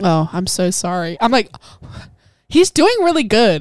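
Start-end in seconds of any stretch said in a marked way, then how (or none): 0.0-1.2 put-on deadpan delivery, much slower pace. Recapping a scene, imitating the woman's reply with a deadpan delivery. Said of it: "she's like deadpan face".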